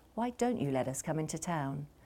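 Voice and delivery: very quiet.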